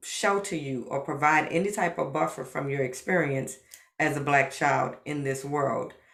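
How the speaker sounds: normal talking voice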